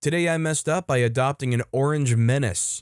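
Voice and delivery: ordinary talk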